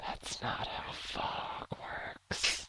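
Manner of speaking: faint, soft, slow, eerie whisper. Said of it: "you all hear these whispers".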